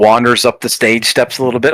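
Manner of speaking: ordinary delivery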